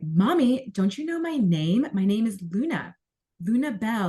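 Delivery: put-on sassy, annoying, entitled little-girl tone. Retelling a dream where a little girl demands her name be known: imitating a sassy, annoying tone. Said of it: "in a very sassy and almost, like, annoying tone".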